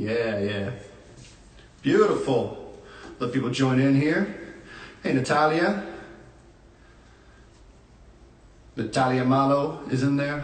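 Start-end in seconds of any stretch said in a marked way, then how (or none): 5.1-10.4 name pronounced with an Italian accent. Greeting someone who is in the chat, saying a name in Italian accent. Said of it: "I say it with the Italian accent".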